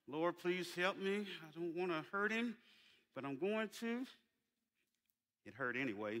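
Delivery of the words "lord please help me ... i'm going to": put-on clenched-teeth speech, quieter, lower. Acting out their mama praying to god, imitating clenched-teeth speech. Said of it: "through her teeth with a clenched mouth".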